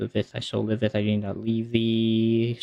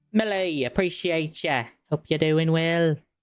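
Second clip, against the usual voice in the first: odd put-on Scottish accent, pitched up; 6 semitones higher than usual. Signing off a thank-you to a listener by name, weird scottish accent. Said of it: "I don't know why I said that in a weird Scottish accent".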